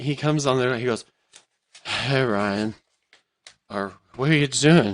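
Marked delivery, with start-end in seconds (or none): 1.8-4.9 put-on drunk voice, slower, lower pitch. Retelling a friend showing up at the door, imitating his drunk voice. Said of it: "Why are you talking like that?".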